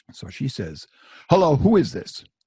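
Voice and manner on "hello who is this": loud, high, very angry woman's voice. Retelling a phone call where a woman asks who's calling: imitating an angry woman. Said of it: "she also sounded very angry".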